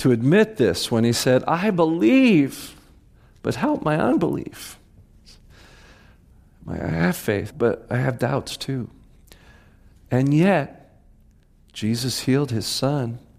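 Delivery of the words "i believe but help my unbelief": high, exasperated, frustrated cry. Telling a Bible story, the speaker voices the centurion's confession: acting out a frustrated exclamation. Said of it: "he exclaimed it like he was so frustrated".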